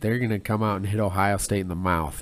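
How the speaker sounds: ordinary talk, nothing marked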